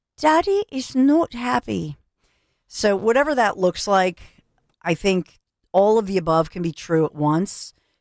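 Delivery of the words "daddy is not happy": drawn out, swooping and squeaky. Recalling the NATO chief's daddy comment; Peppa Pig voice. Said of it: "in my Peppa Pig voice".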